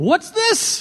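very high, all-out exaggerated British accent. Play Des Evans holding up a ball that dropped into his lap, in his biggest British accent. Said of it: "said in his biggest British accent".

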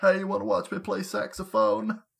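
rough-edged statesman voice impression. Joining the bit about Darrell Hammond doing Bill Clinton: Bill Clinton impression. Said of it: "doing his, uh, Bill Clinton impression?".

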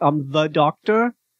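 knowing, loaded, meaningful delivery. Voicing a character introducing himself with raised eyebrows: playing the Doctor, eyebrows raised. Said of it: "raising my eyebrows, like".

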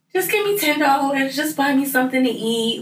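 high, light, casual offhand tone.

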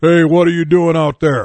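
booming voice, big booming shout. Retelling the moment a best friend's big brother called out, in a booming voice. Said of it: "there was this booming voice".

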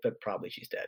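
soft, whispered, grim aside. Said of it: "and then they're like".

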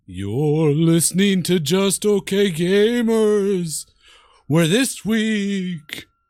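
eerie, very slow spooky voice. Opening the show about returning to a haunted mansion: spooky haunted-mansion voice. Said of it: "why are you talking like that?".

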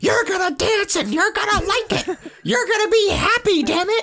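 mock high-pitched, shrill, bossy teacher yelling. Retelling how teachers yelled at a crying child: imitating teachers yelling. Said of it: "the teachers are yelling at me to say".

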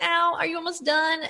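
high, tearful crying whimper of pain. Retelling a woman crying while hooks go into her scalp: imitating someone crying in pain. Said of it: "And she's crying and she's like".

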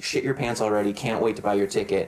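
plain

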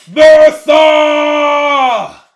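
very high, very loud, shrill, drawn-out orc shriek. Voicing an angry orc in a cave fight: orc screaming. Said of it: "you hear him scream out".

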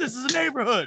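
put-on grumpy, cranky, high old-man holler. Teasing about the pandemic, acting an old guy yelling at cars: mock old guy yelling. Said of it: "that old guy sitting on the porch yelling at cars".

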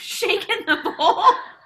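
laughing loudly and high.

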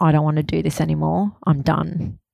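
ordinary talk

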